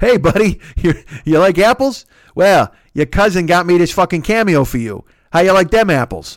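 loud, bad, put-on attempted Boston accent. Host mimics a paid Cameo message to a young man, attempted Boston accent. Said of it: "I can't do a Boston accent, but I'll try".

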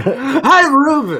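very high, loud, bad put-on Southern accent. Greeting the co-host in a Southern Harry Caray voice. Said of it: "is a Southern Harry Carey".

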